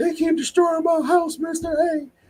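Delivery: acted, very high, whiny crying little boy voice. Imitating a kid blocked on Roblox: imitating a kid crying. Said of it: "straight in the face, crying".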